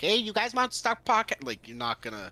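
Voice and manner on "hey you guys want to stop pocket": put-on Chinese accent, very high-pitched and loud. Imagining someone who learned Mandarin and Cantonese, put-on Chinese accent. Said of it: "imagine Dan walking now is like".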